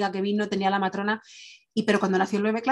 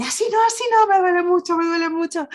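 very high, loud, pained shout; 9 semitones higher, 6 dB louder than usual. Woman retelling giving birth, reenacting her pained shout. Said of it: "me acuerdo que grité".

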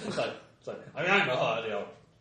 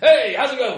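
very loud, high-pitched, jovial, friendly belting; 10 semitones higher, 10 dB louder than usual. Voicing a friendly Hutt greeting someone: loud, friendly, gregarious Hutt. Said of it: "really loud, friendly, gregarious hut".

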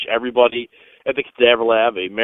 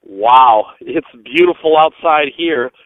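loud, sarcastic, mock-praising cheer; 2 semitones higher, 5 dB louder than usual. Greeting two people from freezing Detroit, sarcastic. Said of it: "you can sense my sarcasm in this".

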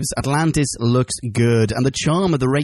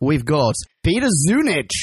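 ordinary delivery

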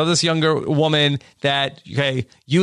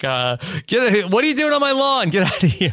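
put-on woman's scream, higher; 5 semitones higher than usual. Retelling a woman who comes out and yells at the kids, imitating a woman screaming. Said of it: "starts screaming at the kids like".

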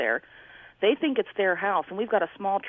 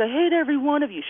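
mock screaming, higher and louder; 8 semitones higher, 4 dB louder than usual. Retelling a mother screaming at her family, imitating someone screaming. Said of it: "She's screaming at her family".

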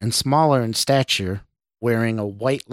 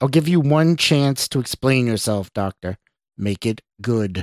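usual speaking voice

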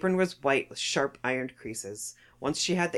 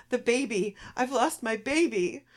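very high, slow, drawn-out distraught crying; 9 semitones higher than usual. A woman on the floor cries out as the narrator enters: crying out. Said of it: "crying out".

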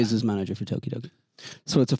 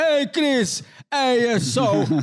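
put-on heavy Italian accent, very high, slow, drawn out; 4 dB louder than usual. Retelling a phone call with Simone, imitating Simone's Italian accent. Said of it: "He's like Italian as fuck on the phone".

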